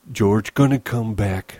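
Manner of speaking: frightened, scared, fearful voice. Reading a novel, voicing a character reassuring himself, frightened voice. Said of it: "Lenny reassured himself in a frightened voice".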